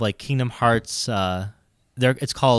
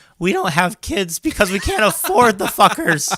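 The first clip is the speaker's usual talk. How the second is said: very high outburst, voice cracking; 9 semitones higher, 5 dB louder than usual. Retelling talking back to a man who called millennials selfish; retelling with cracking voice. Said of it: "With my voice cracking and everything".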